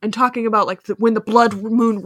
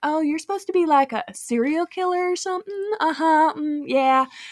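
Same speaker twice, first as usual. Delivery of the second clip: high, very dismissive mocking tone. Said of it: "she's, like, super dismissive".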